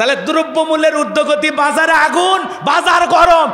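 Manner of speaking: rising, preacher-style shouting.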